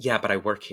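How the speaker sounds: mocking, condescending put-on voice. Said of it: "in a condescending way".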